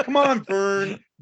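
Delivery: slow, put-on scoffing kid voice.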